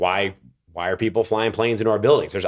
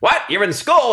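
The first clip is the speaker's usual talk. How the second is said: put-on old-timey movie voice, higher and louder; 13 semitones higher, 5 dB louder than usual. Retelling how an agent reacted on the phone: imitating an old-timey movie agent. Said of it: "like an old-timey movie now, like, suspenders and cigar".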